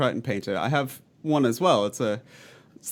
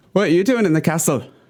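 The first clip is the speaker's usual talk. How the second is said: high, loud, shoddy put-on Scottish accent; 5 semitones higher, 7 dB louder than usual. Voicing a figure in a role-play who questions a castle visitor, bad Scottish accent. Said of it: "I am doing the shit Scottish accent the whole time".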